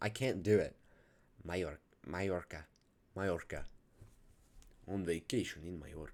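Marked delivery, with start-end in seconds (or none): 4.9-6.1 trying a put-on British accent. Asked how to say it, trying it in an attempted British accent. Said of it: "How do you say that in a British accent?".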